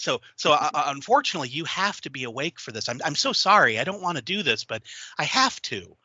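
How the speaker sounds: very calm, completely composed pleading. Acting out a character's line in a pitched scene, calm pleading voice. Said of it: "like just like this pleading and like this very calm".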